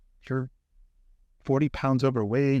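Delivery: ordinary delivery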